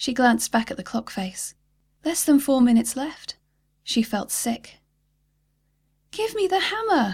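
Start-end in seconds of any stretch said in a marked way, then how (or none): 6.1-7.1 desperate, urgent, demanding shout, very high-pitched. Narrator reads a daughter shouting at her dad as the clock runs down: yelled. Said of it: "she yelled".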